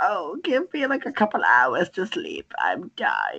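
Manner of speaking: put-on sleepy, swooping little old lady voice. Retelling how she'd respond when visited, imitating a little old lady getting out of bed. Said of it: "like a little old lady getting out of bed".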